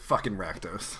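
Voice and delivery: hushed whisper under the breath. Speaking in character as the group sends someone upstairs, whispering. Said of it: "I whisper".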